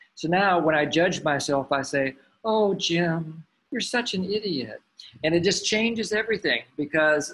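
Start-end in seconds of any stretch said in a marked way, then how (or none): 2.5-4.8 slow, warm kindergarten teacher voice. Speaker voices their inner self-judging voice as a kindergarten teacher's voice. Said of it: "a kindergarten teacher's voice".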